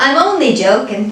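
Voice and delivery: admittedly bad, put-on Irish accent. Saying they're only joking to viewers, in an Irish accent. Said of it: "Did I sound Irish there?".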